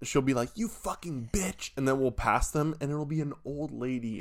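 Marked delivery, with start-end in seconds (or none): 0.5-1.7 pitched-up, angry cursing outburst. Imitating Lena cursing at another driver: imitating Lena's road rage. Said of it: "Lena gets really bad road rage".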